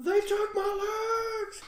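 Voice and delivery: mock very high, very slow scream, my stretched. Retelling a haunted-house actor with no legs: imitating a man screaming. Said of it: "And he's screaming".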